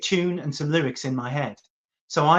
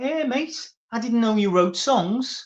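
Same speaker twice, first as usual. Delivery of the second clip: really broad put-on Liverpool accent, pitched up; 7 semitones higher than usual. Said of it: "Jeff's really broad Liverpool".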